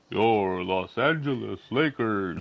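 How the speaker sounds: very low, bassy, deep announcer voice. Adding to a list of announcers, imitating the Lakers' announcer: bassy Lawrence Tanter impression. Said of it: "Lawrence Tanter with the bassy".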